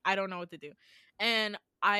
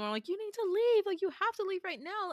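yelling at a much higher pitch; 10 semitones higher than usual. Speaker recounts yelling at their mom as a teenager, retelling the yell. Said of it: "while I'm yelling at my mom".

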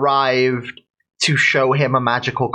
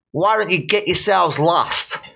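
put-on blend of New York and Russian accents; 5 semitones higher than usual. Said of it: "like across between New York and Russia".

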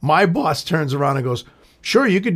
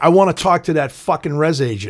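normal talking voice

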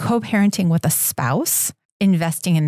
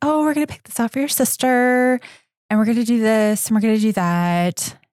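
super nice, high, sweet, sugary mother voice; 5 semitones higher than usual. Telling about a mom at a children's sale talking to her kid, imitating a sweet mom voice. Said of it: "it went from like sweet mom voice".

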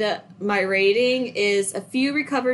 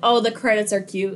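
usual speaking voice

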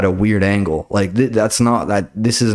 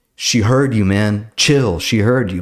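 plain

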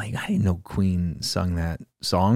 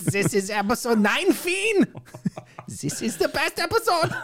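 put-on German accent. Podcast co-host opening episode 19 in a horrible stereotypical german accent. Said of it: "It's just English with a... stereotypical accent".

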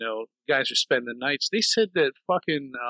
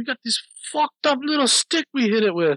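put-on Scottish accent, much higher and louder; 10 semitones higher, 4 dB louder than usual. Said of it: "He's doing like a Scottish accent".

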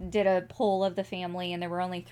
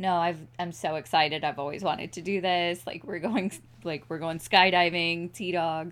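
normal talking voice

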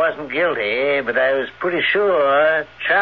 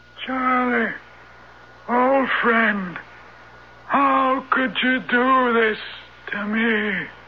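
voice thrown like a ventriloquist; 9 semitones higher than usual. In a horror drama, a ventriloquist makes Horace seem to speak: Horace's thrown voice. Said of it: "Voice throwing. Ventriloquism".

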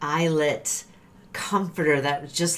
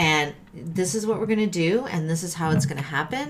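plain

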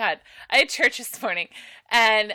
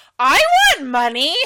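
put-on loud, blunt, plain, unhushed child's blurt; 4 semitones higher, 8 dB louder than usual. Retelling what a kid said aloud while money was passed in a quiet room, imitating a kid's loud outburst. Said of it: "in a normal fucking voice, in a room that echoes".

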